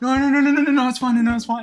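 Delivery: mock panicked, frantic soothing hush. Retelling trying to calm a crying brother: imitating own panicked soothing. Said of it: "I'm like".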